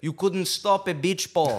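loud, high, put-on Eastern European accent. Quoting a guy's line from the locker room, in an Eastern European accent. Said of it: "The Eastern European accent on that one guy".

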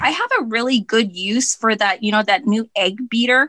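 ordinary delivery

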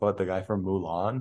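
ordinary talk, nothing marked

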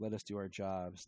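ordinary talk

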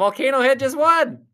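high, loud, belted ring announcer call.

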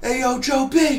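mock yelling, very high.

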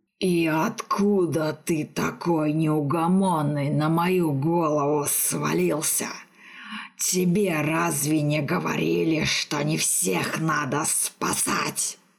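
slow, displeased, irritated hissing grumble. Narrator reads the vampire's reply to the mage shaking him awake, hissing with displeasure. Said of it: "Недовольно зашипел вампир".

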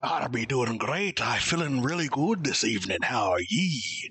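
laid-on, put-on Irish-accented pirate voice. Introduced by the podcast host, the co-host answers how he is, irish pirate voice. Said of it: "Apparently you're an Irish pirate".

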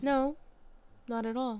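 flat, robot-like monotone voice. Answering another speaker's remark with a quick denial: robotic voice. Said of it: "Literally sounded so robot there".

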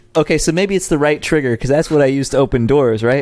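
ordinary talk, nothing marked

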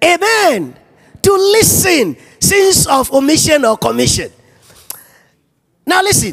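high, loud preaching shout.

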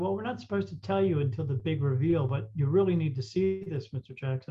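ordinary talk, nothing marked

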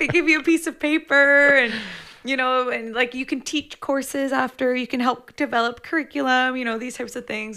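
loud, high-pitched eager ramble.

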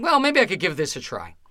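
ordinary delivery

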